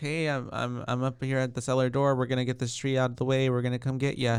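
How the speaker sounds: ordinary delivery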